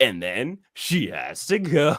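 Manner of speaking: very slow, stagey, sing-song, stilted line reading. Quoting a contestant's confessional: imitating stilted delivery. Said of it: "a little stage".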